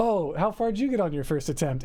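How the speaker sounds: ordinary talk, nothing marked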